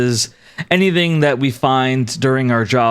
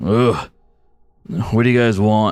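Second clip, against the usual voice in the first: put-on grunting voice, much lower; 2 semitones lower than usual. Interrupted by people coming in on a tour, he grunts at them: Conrad grunting. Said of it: "he just he kind of grunts".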